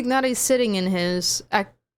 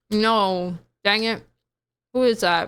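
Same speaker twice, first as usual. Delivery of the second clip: talking while chewing, mouth full of food. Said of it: "speaking with my mouth full".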